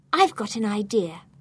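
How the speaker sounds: plain reading voice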